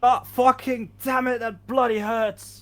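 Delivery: very high, shrill, loud pained scream. In a game, flames lick a character's face and he is screaming in pain. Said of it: "he just screams out in pain like".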